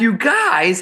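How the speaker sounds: loud American exclamation. Retelling complaining to students about the hot classroom: retelling own loud american voice. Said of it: "and I went American voice".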